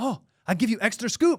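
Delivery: chummy, friendly shop server voice. Retelling what the server said to a first-time customer in line, imitating the server. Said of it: "she goes".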